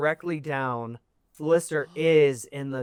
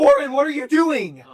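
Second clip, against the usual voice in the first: very high, loud, terrified fearful scream; 12 semitones higher, 7 dB louder than usual. A mother shouts after a boy running in a frenzy, screaming in fear. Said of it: "as she she screams".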